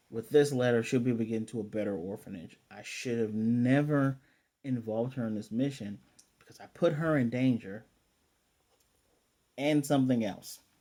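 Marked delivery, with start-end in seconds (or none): none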